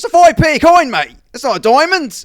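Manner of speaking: full-volume shout. Retelling what a man in church yelled about a coin: imitating someone shouting. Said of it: "top of his fucking lungs".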